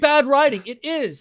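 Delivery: very loud, high, full-throated, drawn-out scream. Agreeing with another speaker mid-rant into the mic, screaming. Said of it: "because I'm fucking screaming".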